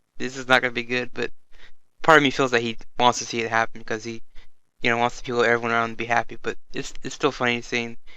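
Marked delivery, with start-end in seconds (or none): none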